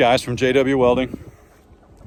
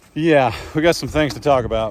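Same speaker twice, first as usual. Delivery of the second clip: usual speaking voice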